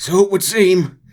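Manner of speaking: hurt-sounding put-on voice. Reading a scene aloud, voicing John: John voice sounding hurt. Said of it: "John sort of permanently sounds hurt".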